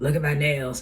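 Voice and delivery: eerie, creepy put-on voice. Telling how she shows her husband her nails: creepy put-on voice. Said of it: "I really do say it in that creepy voice".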